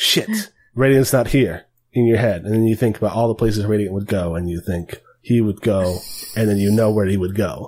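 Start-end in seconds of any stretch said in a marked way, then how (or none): none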